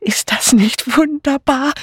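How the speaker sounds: panting excitedly. A woman with her hands up at a man's command, panting excitedly. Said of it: "keuchte eine weibliche Stimme".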